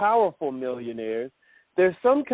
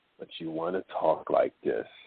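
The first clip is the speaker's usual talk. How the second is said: low, hushed, breathy late-night DJ voice; 13 semitones lower, 5 dB quieter than usual.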